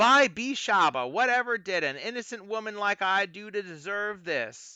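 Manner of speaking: put-on high, aggrieved, lamenting, put-upon woman's voice. Narrator tells how Chukka replies to a friend, doing a Mad Maggie voice. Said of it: "replies in a voice that resembles Mad Maggie".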